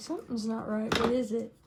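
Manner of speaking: usual speaking voice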